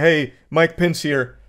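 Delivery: sad, flat, downtrodden, zero-enthusiasm delivery. Act out Mike Pence addressing his fellow Americans, sad, unenthusiastic Mike Pence impression. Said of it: "He just sounded straight up sad".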